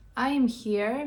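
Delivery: ordinary delivery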